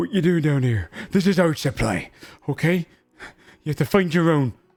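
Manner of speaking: frightened halfling man voice. A halfling father confronts the party at his family's supply: scared halfling man. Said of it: "you'd see this scared halfling family".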